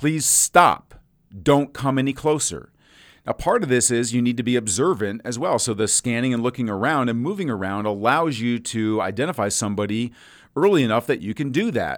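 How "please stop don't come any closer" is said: firm, authoritative, direct delivery, not pleading. Showing how to stop an approaching stranger from a distance: loud commanding voice with authority. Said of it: "You need to use authority in your voice".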